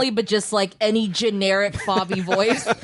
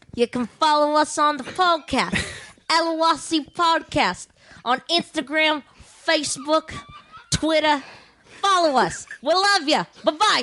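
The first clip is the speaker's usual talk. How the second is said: clumsy put-on Boston accent, pitched up; 6 semitones higher than usual. Taking the podcast out as asked: put-on boston accent. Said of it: "take us out with the Boston accent".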